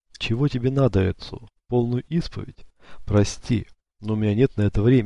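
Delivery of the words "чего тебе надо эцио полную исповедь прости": ordinary delivery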